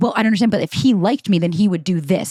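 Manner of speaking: ordinary talk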